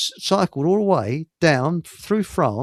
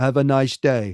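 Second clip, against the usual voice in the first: halting, broken, non-native English; 3 semitones lower than usual. Retelling how one of them walked off, quoting him in broken English. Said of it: "said in broken English".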